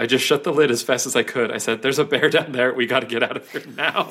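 plain

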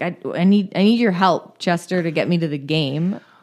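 ordinary talk, nothing marked

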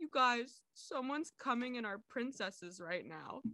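put-on, weepy, tearful blubbering. Retelling what a friend said while hanging out, imitating a fake cry. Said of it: "he starts doing, like, a fake cry".

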